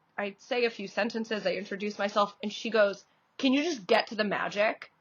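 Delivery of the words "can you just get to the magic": mimicked cutting, nasty tone. Retelling what a rude spectator said at the table: imitating a cutting, nasty remark. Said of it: "so cutting and so nasty".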